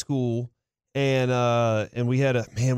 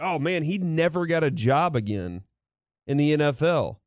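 ordinary talk

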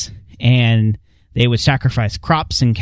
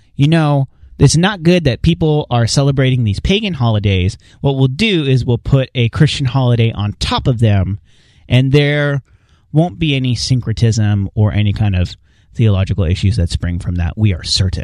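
plain

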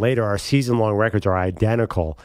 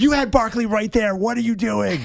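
put-on shrieking, very high-pitched screamed outburst; 11 semitones higher than usual. Retelling yelling at a quarterback who missed an open receiver, retelling a scream. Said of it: "And I'm screaming".

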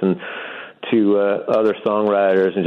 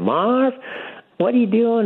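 put-on Alabama accent, much higher pitch. Retelling a woman's phone call to him one night, in an Alabama kind of voice. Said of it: "in this Alabama kind of voice".

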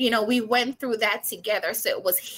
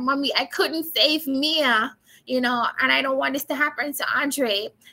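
speaking through put-on, acted-out crying; 3 semitones higher than usual. Recounting what they told their mom about mia and andre, imitating own crying while speaking. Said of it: "And then I just started crying".

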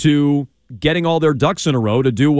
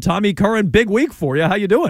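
slightly froggy voice, a little high-pitched; 5 semitones higher than usual. A host greeting his guest after a sponsor read, slightly froggy voice. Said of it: "You sound a little froggy".

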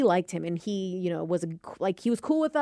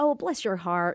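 put-on Southern drawl accent. Describing a Southern man, imitating his accent: imitating a Southern drawl. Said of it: "the accent, the drawl".

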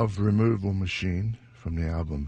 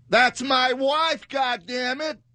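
very high, drawn-out put-on American accent; 4 dB louder than usual. Quizzing a listener on a movie quote, the speaker redoes it in an American accent. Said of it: "I'm doing American".

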